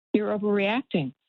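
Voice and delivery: ordinary talk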